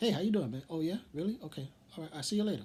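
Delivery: cheesy put-on voice. Complaining that Korg's voice doesn't fit his big build, doing a corny Korg voice. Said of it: "he has this corny voice".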